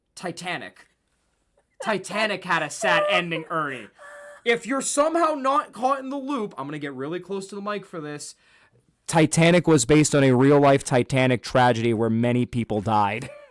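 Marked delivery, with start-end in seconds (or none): none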